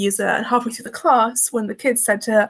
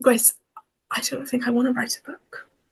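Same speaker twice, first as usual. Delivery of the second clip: put-on whisper, quieter; 4 dB quieter than usual. Retelling what a friend once said to the speaker: imitating someone whispering. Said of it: "almost like whispering".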